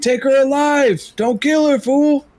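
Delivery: shrill, very high shouting. A player's character in a game calls to the party during a fight, yelling to the party. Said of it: "I'm also gonna yell to the party".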